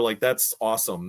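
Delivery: plain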